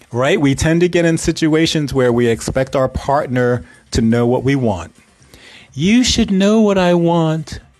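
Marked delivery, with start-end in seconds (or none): 5.7-7.6 put-on voice, slightly raised and higher-pitched. Speaker acts out what we expect a partner to know: voice raised a little. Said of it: "I did raise my voice a little to say that".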